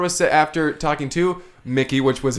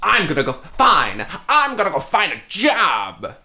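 put-on combative, hard-edged, slow, "job" drawn out. Recapping a scene, speaker acts out her line very aggressively. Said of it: "Very aggressively".

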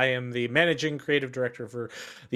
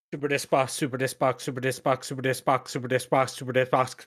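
said very fast, rapid-fire repetition. Asked to repeat a phrase five times very fast, saying it very fast. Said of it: "can you say Super Disc Box 5 times very fast".

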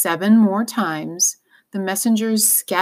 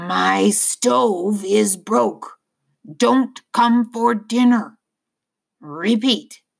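put-on hoarse, slow old man's voice. Narrating a story, the old man gives Lena a message to repeat, slow, hoarse voice. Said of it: "in a slow, hoarse voice".

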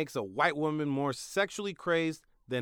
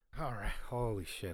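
out of breath, lower and quieter; 6 semitones lower, 9 dB quieter than usual. After finishing a bit for listeners, the speaker is out of breath. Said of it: "I'm out of breath".

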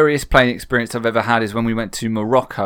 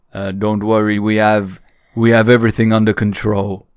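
put-on sinister-sounding voice. Retelling what the pilot said over the tannoy: imitating a sinister-sounding voice. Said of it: "sinister-sounding voice coming over the tannoy".

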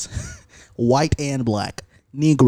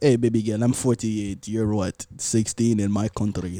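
put-on Russian accent, much lower pitch; 3 semitones lower, 4 dB quieter than usual. Acting out a man's pickup line to a girl, in a Russian accent. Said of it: "when you were giving that Russian accent".

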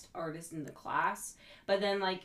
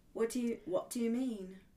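fake British accent, pitched up; 5 semitones higher than usual. Joking that British people fake their accent: fake British accent. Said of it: "Yeah, exactly like that".

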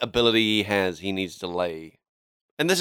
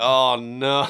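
ordinary talk

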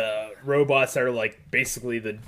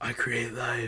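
put-on actor's whisper; 6 dB quieter than usual. Describing a movie scene, quoting an actor's line while imitating Eddie Redmayne whispering. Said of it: "He's whispering".

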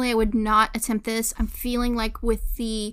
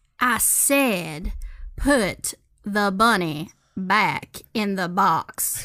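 put-on accent, much lower pitch; 2 semitones lower than usual. Performing a scripted scene, slipped into a Nylons accent. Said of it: "you even slipped into the little Nylons accent there".

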